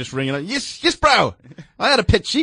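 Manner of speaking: put-on New Zealand accent. A host imitates kiwi callers ringing in, put-on kiwi accent. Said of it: "if you use that accent".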